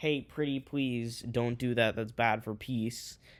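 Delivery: mock pleading, imitated begging tone. Voicing Tanzania and Somalia asking the others not to invade: imitating a pleading plea. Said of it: "will basically plead".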